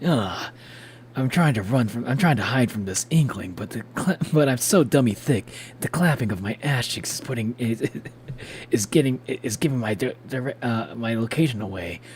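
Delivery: attempted snake voice that misses. Narrating a game as Snake, chased by an infected inkling, Shadow the Hedgehog voice. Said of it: "I tried to do a snake voice".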